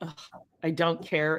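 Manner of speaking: put-on bored condescension. Recounting a trial and describing how the judge sounds, mimicking a bored condescending judge. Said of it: "his voice comes across, like, very, like ... and condescending".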